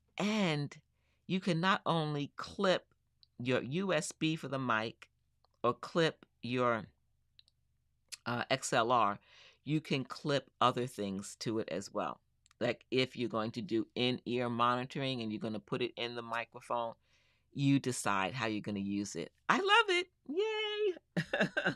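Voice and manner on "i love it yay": very high, excited cheer. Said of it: "can you tell I'm excited".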